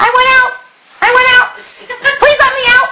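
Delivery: silly, funny put-on squeaky voice, very high. Speaker voices a figure kept inside asking to be let out; funny put-on voice. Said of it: "I'm using a funny voice".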